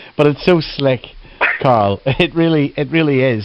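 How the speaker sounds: slow speech, chuckling and laughing through words. Reacting to a company speaker's answer about call centre systems; laughing while talking. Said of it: "I'm sorry to be laughing".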